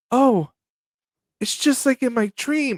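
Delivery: stiff, wooden line reading. Retelling a scene, imitating the Red Ranger's bad acting. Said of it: "that's exactly how he says it".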